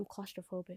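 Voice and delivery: hushed whisper. A narrator reads a male character's line to the storyteller, whispering. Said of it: "he whispers".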